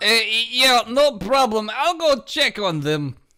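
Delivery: fake Japanese accent throughout.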